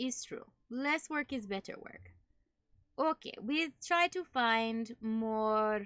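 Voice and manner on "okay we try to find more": bad fake German accent with broken English. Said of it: "having to do der-, terrible accent".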